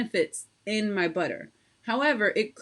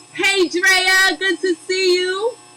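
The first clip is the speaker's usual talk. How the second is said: raised, rising yell; 10 semitones higher, 9 dB louder than usual. Soap maker greeting people over a running machine: yelling over machine noise. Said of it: "Sorry for yelling in your ear".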